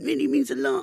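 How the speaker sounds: very high, deliberately ugly, horrible put-on voice. Saying a line as it sounds in one's head, horrible put-on voice. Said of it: "I say that in my head in a horrible voice".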